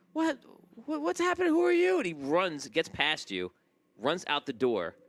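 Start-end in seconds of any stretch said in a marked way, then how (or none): 0.1-1.9 put-on shrill, loud, very high little kid voice. Voicing a kid who wakes as an attacker misses him: voicing the kid. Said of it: "and the kid's like".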